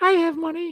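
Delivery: squeaky, very high-pitched put-on voice. Re-quoting the exact line another man said, in a high-pitched voice. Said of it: "In high voice".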